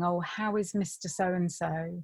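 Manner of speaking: ordinary talk, nothing marked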